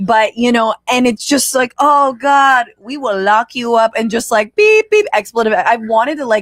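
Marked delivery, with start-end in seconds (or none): 1.8-3.9 slow put-on Puerto Rican accent on English. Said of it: "I'm doing more of a Puerto Rican".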